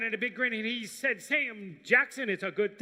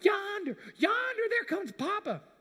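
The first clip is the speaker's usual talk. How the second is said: put-on, very high calling out; 10 semitones higher than usual. Retelling how a little brother called out, seeing Papa coming: imitating a little brother calling out. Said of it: "he calls out".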